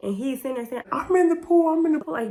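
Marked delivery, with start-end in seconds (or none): 0.9-2.1 put-on loud, high-pitched insistent yelling. Retelling how a friend insisted he was in the pool, imitating someone yelling. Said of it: "When I tell y'all he's yelling".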